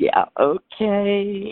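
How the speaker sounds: high, slow, drawn-out, skeptical "yeah okay".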